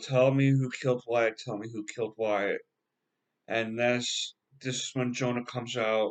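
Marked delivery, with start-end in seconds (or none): none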